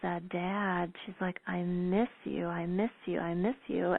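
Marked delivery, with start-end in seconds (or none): 1.5-3.9 put-on sobbing, tearful crying. Retelling a woman who stopped her car and called out to her dad, imitating her crying. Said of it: "and just started crying".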